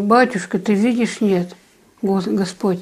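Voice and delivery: ordinary talk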